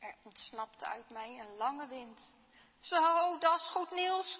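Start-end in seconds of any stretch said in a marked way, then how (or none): 2.8-4.4 merry, cheerful, raised voice. Reading a story set in a hospital room, the neighbour in the next bed remarks: cheerful voice. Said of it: "klonk de vrolijke stem van de buurman".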